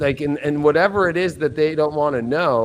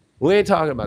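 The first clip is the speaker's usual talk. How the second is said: mock aggressive talking. Retelling how an interviewee shut down a question: imitating someone talking aggressively. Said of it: "aggressive too".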